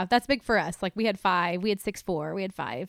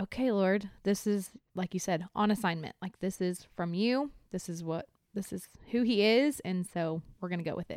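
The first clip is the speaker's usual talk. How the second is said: normal talking voice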